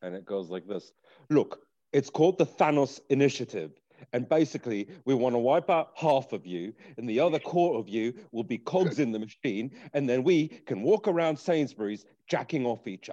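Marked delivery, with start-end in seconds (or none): 1.3-13.1 put-on British politician voice, speechifying on stage. Showing the others an impression that has been practiced: Boris Johnson impression. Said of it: "my Boris Johnson impression".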